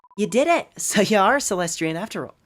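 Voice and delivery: put-on Irish accent creeping in. Reading a game character's dialogue aloud, slipping into an accidental Irish accent. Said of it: "I'm going Irish".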